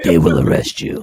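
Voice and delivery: very deep, dark, brooding superhero voice. Warning someone not to let her into the house, in a Batman voice. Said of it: "In my Batman voice".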